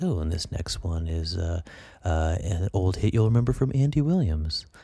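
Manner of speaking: classic radio announcer voice. Answering praise for their radio voice, imitating an oldies station: oldies radio DJ voice. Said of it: "if you're listening to a real classic oldie station".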